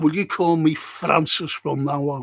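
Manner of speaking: ordinary talk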